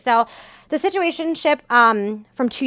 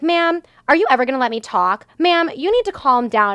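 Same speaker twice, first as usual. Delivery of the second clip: mocking, put-on rude voice. Retelling a customer-service call, the speaker imitates the agent, mocking a rude phone agent. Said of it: "they're so rude to me".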